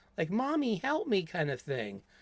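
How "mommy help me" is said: put-on high-pitched little kid's voice. Describing the only dialogue Jason ever says: Jason child voice. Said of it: "using this child's voice".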